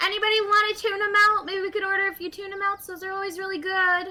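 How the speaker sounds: loud yell carrying across a room. Asking people nearby about tuna, then yelling to the rest of the party: yelling to the party. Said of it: "I'm gonna yell to the rest of the party".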